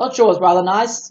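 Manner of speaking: amateur, attempted put-on British accent. Streaming, after a viewer suggests it, try out an attempted British accent. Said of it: "I tried using a British accent".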